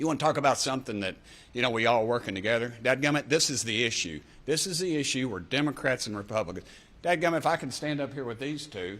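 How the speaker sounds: jacked-up voice. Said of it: "Sorry I'm so jacked up".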